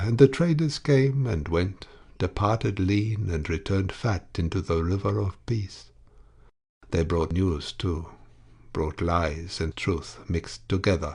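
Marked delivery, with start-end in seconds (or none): none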